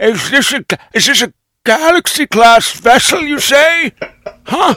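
acted elderly grandpa voice. The speaker tries out the voice they were working on, old grandpa Picard voice. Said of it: "is this what a grandpa sounds like".

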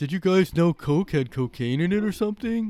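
mock dumb guy voice, high and loud.

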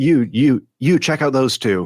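high, barking, shouted words. Voicing a regulator giving orders in a factory: shouted command. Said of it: "more commands getting shouted".

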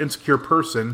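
plain

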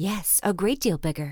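ordinary talk

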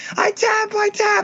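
screaming, squealed very high.

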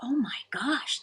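toneless whisper of realization. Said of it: "And I thought".

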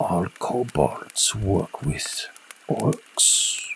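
breathy, hushed, secretive whisper. Glancing at the kobolds in their tents and leaning down to you, whispering. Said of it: "whispers, like, leans down to you".

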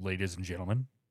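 put-on radio announcer voice. Discussing how their own voice sounds, showing a radio announcer voice. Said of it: "I've got that radio announcer voice".

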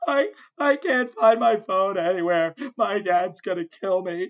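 mock tearful sobbing, crying and screaming in panic. Retelling what a new girl from the group said, imitating someone crying. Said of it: "she's screaming, crying".

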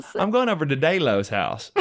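put-on thick Southern US twang, laid on heavy. Joking about a misspoken name, put-on thick Southern twang. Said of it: "my thick Southern twang".

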